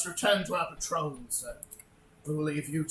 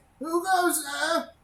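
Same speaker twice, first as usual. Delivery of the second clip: put-on shrill, very high, loud elderly voice; 13 semitones higher, 7 dB louder than usual. Narrating a game, voicing someone behind a door: older voice. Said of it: "an older voice say".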